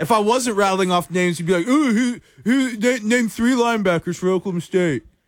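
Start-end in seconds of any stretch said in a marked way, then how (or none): 1.7-5.0 put-on mocking voice, needling, stumbling, pitched up. Imitating a co-host demanding names of linebackers: Kerry impression. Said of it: "I like that Kerry impersonation".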